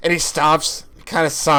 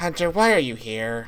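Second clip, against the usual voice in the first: worn-down, weary voice with no edge; 2 semitones lower, 4 dB quieter than usual. Voicing Lucha calling out to Hunter on a dock: tired, not angry. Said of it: "He almost sounds tired".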